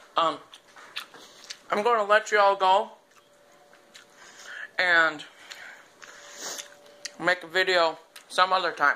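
talking with a mouthful of food, chewing. Video maker wrapping up a video while eating lunch, talking with mouth full. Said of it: "Pardon my mouthful".

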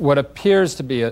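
stress on "appears".

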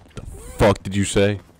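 loud, startled shout.

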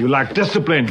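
angry, loud yell in an Austrian accent.

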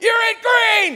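shrill, loud screaming at very high pitch. The speaker imitates a woman screaming at him in a workout class, retelling a scream. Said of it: "She's screaming at me".

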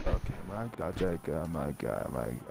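barely audible, very quiet, slow, drawn-out murmur. Showing the other player how they were talking before: imitating very quiet talking. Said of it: "That's how you were talking".

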